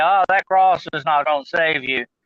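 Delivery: ordinary delivery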